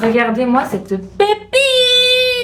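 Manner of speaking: high, slow, squealing excited cry.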